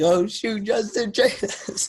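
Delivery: very high, loud, thrilled, freaking-out outburst. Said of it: "I was so excited".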